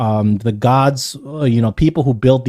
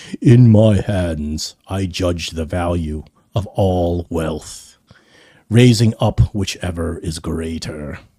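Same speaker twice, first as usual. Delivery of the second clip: deep, disembodied godlike voice; 6 semitones lower than usual. Narrating a scene, the speaker voices a sourceless voice that booms out. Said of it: "a voice booms out".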